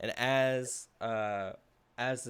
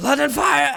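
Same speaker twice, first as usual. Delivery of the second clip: very loud, very high, shrill yell; 17 dB louder than usual. Voicing a cursed blade's final cry in a player's head: sword's last yell. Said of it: "with one last kind of yell in your head".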